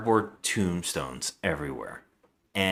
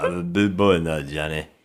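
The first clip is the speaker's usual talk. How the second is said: put-on tough-guy movie voice, louder; 2 semitones lower, 5 dB louder than usual. Retelling a film actor's line: Sylvester Stallone type voice. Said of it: "going for a Sylvester Stallone type".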